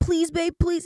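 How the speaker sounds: acted begging plea. Retelling how a first boyfriend begged for nudes: imitating a boyfriend begging. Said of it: "And he begged and begged".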